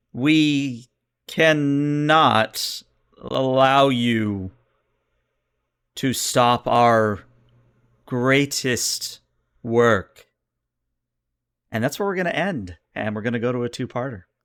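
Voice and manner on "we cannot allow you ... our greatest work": very slow, stuttering, glitchy computer machine voice. Voicing a voice coming over the ship's comms: stuttering glitchy computer voice. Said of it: "I'm gonna do my best example of this myself".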